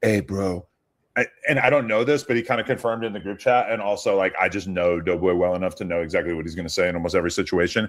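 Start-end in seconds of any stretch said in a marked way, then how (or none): 0.0-0.7 imitated whisper. Retelling how Doughboy whispered in someone's ear after the cake: imitating Doughboy whispering. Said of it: "whispers into his ear and goes".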